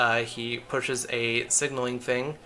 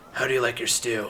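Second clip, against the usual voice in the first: rough, gruff voice. After the knocks, a hidden speaker behind a door slot asks a question, rough voice. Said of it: "you hear a rough voice from the other side speaking".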